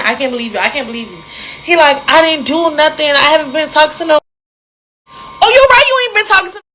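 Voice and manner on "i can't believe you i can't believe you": mock tearful crying and pleading, faster. Retelling a fight where she cried and asked to go home, imitating her own crying. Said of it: "I keep saying".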